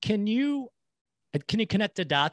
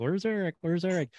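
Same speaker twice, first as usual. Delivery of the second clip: high, nervous fretting. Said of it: "I was a little nervous".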